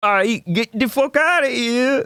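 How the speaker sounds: bad put-on Spanish accent. Speaker acting out what people kept telling him, bad Spanish accent impression. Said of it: "impressions I just did".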